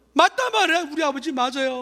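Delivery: put-on crying child voice, high and tearful. Retelling a child's protest after being teased, imitating a crying child. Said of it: "막 울면서".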